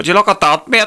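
put-on Belfast accent, young man's voice, very high. Imitating the boy in the van from the video with a Belfast accent impression. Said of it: "the boy in the van with a Belfast accent".

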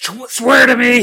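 put-on gruff superhero voice.

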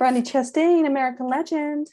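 put-on American accent. Answering who the tribute was to: put-on american accent. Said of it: "That's my American accent".

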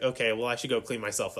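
ordinary talk, nothing marked

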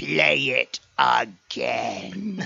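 rough, creaky-voiced emperor voice. Retelling the actor on stage after a trailer showing, in his Emperor voice. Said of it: "in his best Emperor voice".

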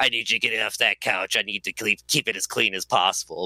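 voice like a cigarette smoker. Retelling how a woman you worked with ordered you off his couch, in Sandy's cigarette-smoker voice. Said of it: "she talked like this and smoked cigarettes".

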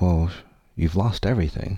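understated, restrained voice of thunder. Retelling hearing a voice while on knees: imitating a thunderous voice. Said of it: "this thunderous voice came".

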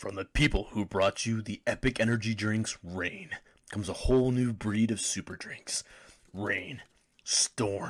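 very loud, booming, deep bellowing announcer voice. Before a break, reading an energy drink commercial in a big deep bellowing voice. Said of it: "this big, deep, bellowing voice".

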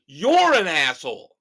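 high, very loud, emphatic yelling. Demonstrating what italics sound like when spoken: emphatic yelling. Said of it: "I'm yelling at Dave like this".

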